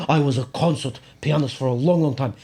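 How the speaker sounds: put-on Russian-sounding accent. Imitating a man who screams at kids in his class, in a Russian-sounding accent. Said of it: "he screams at kids in this Russian-sounding accent".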